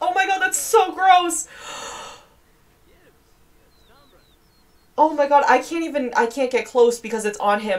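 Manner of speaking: grossed out and panicking. Playing a game as something gross lands on him, freaking out. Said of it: "I'm freaking out".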